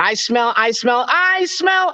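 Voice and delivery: high-pitched bully voice, very slow, drawn out, rising. Actor redoing his bully role's line from a classic movie, in a high-pitched voice. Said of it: "I was the high pitched voice".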